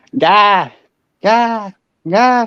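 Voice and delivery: put-on thick Southern accent, calling. Speaker recalling hearing their late grandmother calling their name, imitating grandma's thick southern accent. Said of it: "her deep Southern accent being like".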